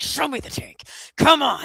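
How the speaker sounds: gritted-teeth frustration. Describing an actor's frustrated scene delivery, retelling it through clenched teeth. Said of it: "like through clenched teeth".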